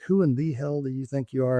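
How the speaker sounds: ordinary talk, nothing marked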